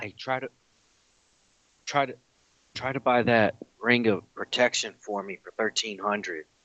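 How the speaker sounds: hushed half-whisper, kept low. Turning to Hata with a request, half-whispering. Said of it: "That's why I'm whispering".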